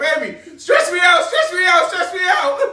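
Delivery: loud scream, full of pain. Retelling a night-time leg cramp, retelling screaming in pain. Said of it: "I'm screaming out in pain like".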